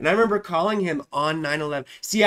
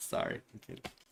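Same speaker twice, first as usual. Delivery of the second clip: ordinary talk, nothing marked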